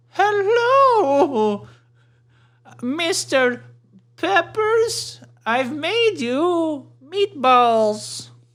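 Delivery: put-on very high, slow, drawn-out old-lady voice. Acting out a skit, bringing meatballs to an office: older lady character. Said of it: "so I'm the older lady, and here I am".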